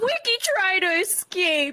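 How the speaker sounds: put-on angry voice. Retelling what he kept saying about the morning: imitating someone saying it angrily. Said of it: "he's still saying it so angrily".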